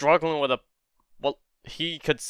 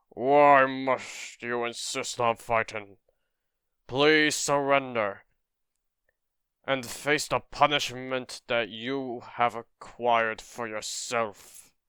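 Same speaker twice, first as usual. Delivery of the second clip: dignified, noble, growly voice; 4 dB quieter than usual. Reading a comic aloud, voicing one character's lines: noble growly voice. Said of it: "I'll give him a more noble growly voice".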